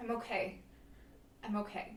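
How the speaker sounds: slow, tearful speech, crying through the words. Resuming an answer after a moment's pause, crying while speaking. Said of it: "she's crying and, and wiping the tears".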